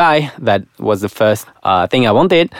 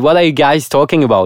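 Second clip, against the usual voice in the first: ordinary talk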